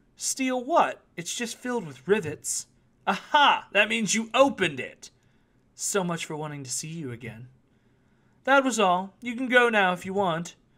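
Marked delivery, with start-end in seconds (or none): 3.1-10.5 unbothered, needling coolness, teasing. A fortune teller speaks to a visitor who has just opened her bag, ending things and telling him he may go. Cool and teasing. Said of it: "The gazelle shifted her eyes and squinted, / Her blue eyes spoke like an insinuating whisper. / She remained perfectly cool, / She remained perfectly cool, observing him with a nonchalant expression".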